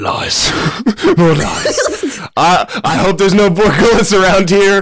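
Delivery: high-pitched put-on creature character voice. Doing an impression of a Borgullet creature: [name]' Borgullet impression. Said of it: "here's [name]' Borgullet impression".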